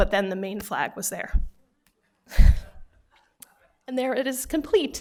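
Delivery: tearful, on the verge of crying. Presenting a completed sculpture, starting to cry. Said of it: "I cry about everything".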